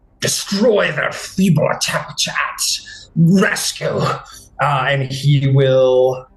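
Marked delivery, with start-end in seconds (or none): 0.2-4.3 growled-out, gruff monster voice. Game master voicing the bloodied prophet in the fight, growling. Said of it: "it growls and says".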